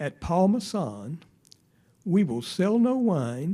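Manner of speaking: slow, distinguished commercial announcer voice. Quoting an old wine commercial's spokesman: slower, like the Paul Masson pitchman. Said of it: "I can just talk a little bit slower".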